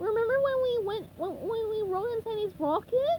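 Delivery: very high, tearful crying wail. Retelling someone's SpongeBob bit, in which SpongeBob cries: mock-crying SpongeBob voice. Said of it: "SpongeBob cries and wails".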